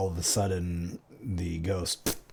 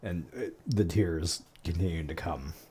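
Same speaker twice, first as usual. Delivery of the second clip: plain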